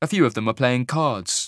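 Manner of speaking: ordinary delivery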